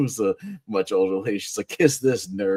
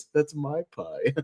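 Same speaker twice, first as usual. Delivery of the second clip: mock mournful, forlorn voice, pitched high; 6 semitones higher, 4 dB quieter than usual. Describing a TV cutaway gag, imitating Ted McGinley's sad voice. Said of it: "Such a sad voice".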